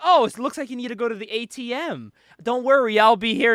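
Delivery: play-acted seductive voice. Recounting a scene where Kat seduces a man for money, imitating Kat's seductive tone. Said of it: "Kat's seducing this man for money".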